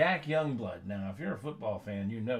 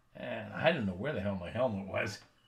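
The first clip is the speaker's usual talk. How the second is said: usual speaking voice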